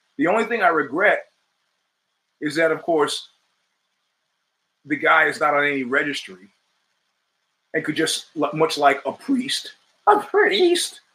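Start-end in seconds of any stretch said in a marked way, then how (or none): 10.1-10.9 slow voice cracking and breaking mid-phrase. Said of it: "my voice is changing".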